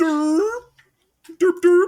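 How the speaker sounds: high, loud, dopey voice with "dur" sounds.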